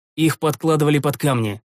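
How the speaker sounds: ordinary delivery, nothing marked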